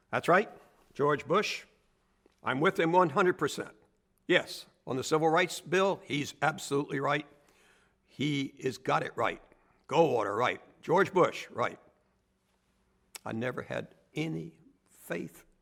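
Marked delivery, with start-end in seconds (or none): 0.1-11.7 high, loud yapping voice. Retelling overhearing a call from a lobby telephone: imitating George Bush's yapping voice. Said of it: "I suddenly hear this yapping voice".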